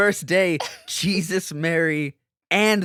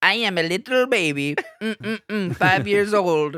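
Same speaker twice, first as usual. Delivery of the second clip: put-on very slow, babyish little-kid voice; 4 semitones higher than usual. Imagining the recordings of a patient talking like a five-year-old: imitating a five-year-old voice. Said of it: "Michelle just being like".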